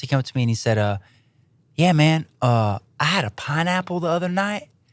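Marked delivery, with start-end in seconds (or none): 1.8-4.6 put-on Southern accent, higher. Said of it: "With that accent".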